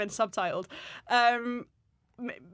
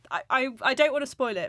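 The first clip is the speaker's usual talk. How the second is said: ordinary delivery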